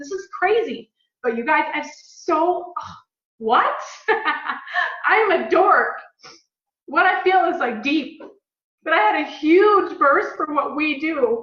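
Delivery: choked up, voice catching, slow and emotional. Telling the guys how blessed they are for what they do, choked up. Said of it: "I'm getting choked up".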